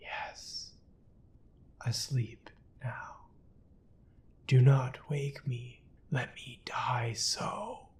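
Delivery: faint, barely audible whisper, drawn out very slowly. A dying man answers the narrator from sleep, barely audible whisper. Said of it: "The dying man seemed to be collecting his energies to speak. / The dying man seemed to be collecting his energies to speak. At my fourth repetition of the question, he said very faintly, / he said ver".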